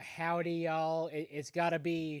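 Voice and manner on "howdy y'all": put-on Southern cowboy accent, quieter. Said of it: "cowboy one".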